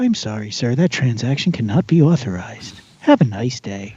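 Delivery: sweet, pleasant, sing-song automated service voice. Voicing an imagined robot scanner refusing a transaction: sweet, pleasant robot voice. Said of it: "they'll give it a sweet, like, pleasant voice".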